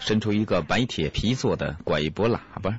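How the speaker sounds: ordinary delivery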